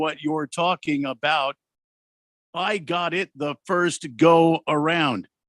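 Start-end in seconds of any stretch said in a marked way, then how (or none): none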